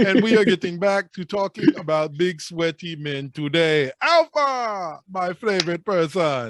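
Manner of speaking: put-on Nigerian accent. Opening this part of the episode and greeting Alpha, in a put-on Nigerian accent. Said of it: "in this sick Nigerian accent".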